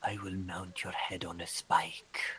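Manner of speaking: ever-so-quiet, low, menacing, threatening whisper. Narrating a fight to Gerald, voicing the creature: Car, the Eater of Hope's quiet whisper. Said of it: "it just whispers ever so quietly".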